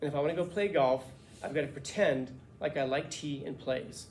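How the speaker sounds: ordinary delivery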